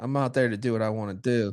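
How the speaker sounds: ordinary delivery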